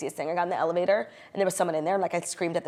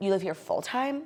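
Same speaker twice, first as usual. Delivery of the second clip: condescending, superior tone. Retelling what a neighbor asked in the building: imitating a condescending tone. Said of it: "with this condescension in his voice".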